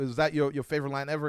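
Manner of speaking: usual speaking voice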